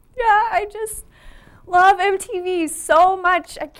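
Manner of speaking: weeping through the words, high tearful voice. In an interview sketch, a fan answers the host, crying. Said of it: "are are you crying?".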